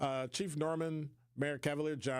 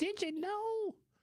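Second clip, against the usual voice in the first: goofy, very high-pitched put-on voice. Imitating someone gossiping to Shay about the host: silly voice. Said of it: "I always gotta make a silly voice".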